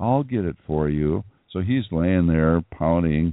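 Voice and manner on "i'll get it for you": mock falsely sweet, humble, helpful tone. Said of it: "false humility associated with someone".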